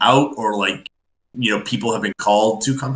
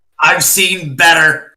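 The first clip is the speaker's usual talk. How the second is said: loud, high-pitched yell. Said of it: "Fennec is just gonna yell back".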